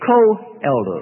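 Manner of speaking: the word co-elder stressed. Explaining how Peter describes himself to the church, stressing the word co-elder. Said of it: "Notice I stress co-elder".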